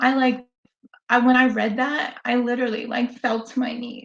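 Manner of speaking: choked-up, near-tears voice. Recalling the moment of reading her reply, the speaker is choking up, near tears. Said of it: "Sorry, I'm not gonna cry".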